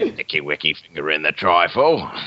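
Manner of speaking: eerie, creepy put-on Cockney accent. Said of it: "That sounds so creepy".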